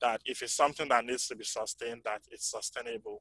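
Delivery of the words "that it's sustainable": soft voice fading out. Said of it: "still not hearing me back there?".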